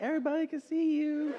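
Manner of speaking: overly polite, unhurried, very high-pitched. Retelling how the hostess spoke to a woman: imitating a super polite hostess. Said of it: "super polite".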